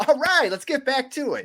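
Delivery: bright, happy, cheerful, very high-pitched voice. Retelling how he got back to it after the camera cut, imitating a cheerful, happy voice. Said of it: "like in all like a cheerful, happy voice".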